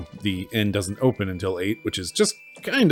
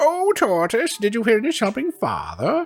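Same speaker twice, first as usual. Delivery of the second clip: put-on old lady voice, much higher, slower. Addressing the tortoise while trying to find the voice, attempted old lady voice. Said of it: "Where's my old lady voice?".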